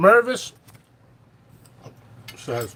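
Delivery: speech through a mouthful. Starting to read out a grower's message, talking with mouth full. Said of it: "sorry, I got a mouthful of food".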